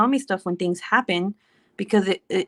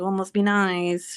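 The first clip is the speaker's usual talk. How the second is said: acted playful slow teasing, "nice" drawn out. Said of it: "I'm just making fun of him".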